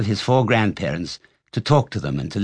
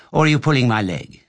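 plain

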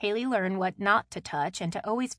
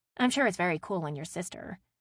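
plain reading voice

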